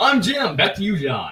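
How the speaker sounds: news reporter voice. Joking that a reporter voice is needed, then signing off: news reporter voice. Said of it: "you gotta put on your reporter voice".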